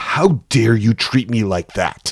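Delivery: angry, sharply hissed delivery. A firefighter confronts a man in a restaurant, hissing angrily. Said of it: "she hisses at Phillip".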